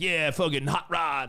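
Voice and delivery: drawn-out, hotshot douchey guy voice. Acting out a pitched movie's hotshot DJ: douchey guy voice. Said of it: "a douchey guy with a leather jacket".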